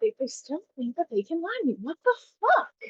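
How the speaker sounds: quiet, low grumbling mutter under the breath. Playing a character who reacts to a lie: muttering under breath. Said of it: "under my breath, I don't know if anybody can hear me".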